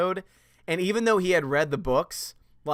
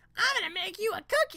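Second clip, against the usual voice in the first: squeaky cartoon character voice, pitched way up; 4 dB quieter than usual. Answering a chat request for a voice, trying a Dee Dee voice. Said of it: "Dee Dee's from Dexter's Lab comes into mind".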